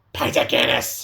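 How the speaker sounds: put-on crackly character voice. Quoting a side character's famous only line from a show: imitating a crackling voice. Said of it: "she says in her crackling voice".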